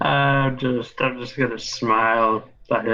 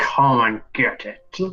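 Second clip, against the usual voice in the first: slow, spoken through clenched, gritted teeth. Answering an enemy in character while biting a knife: through gritted teeth. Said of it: "I'm gonna say through my gritted teeth".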